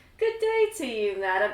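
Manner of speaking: eerie voice, echoey, ringing like an echo. The Night Stalker greets a woman who walks up to him, echoey Night Stalker voice. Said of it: "his voice is like ... it's echoey".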